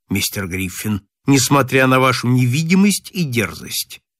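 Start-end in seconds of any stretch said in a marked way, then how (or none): none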